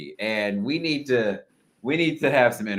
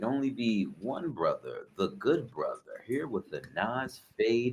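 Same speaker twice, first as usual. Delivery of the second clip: smooth radio-host style announcer voice; 3 semitones lower, 9 dB quieter than usual. Introducing yourself to listeners at the start of episode one hundred eighty-three, in a smooth voice. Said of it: "when you hear this smooth voice".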